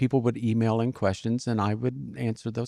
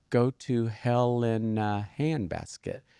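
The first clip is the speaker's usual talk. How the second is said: much slower, drawn-out delivery. Retelling telling people the name, slow and drawn out. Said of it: "why are you saying it so slow?".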